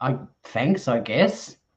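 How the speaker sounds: play-acted slow, half-hearted, unimpressed, dismissive. Retelling how he read out a super chat and rolled his eyes: imitating an eye-rolling reply. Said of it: "rolled his eyes and went".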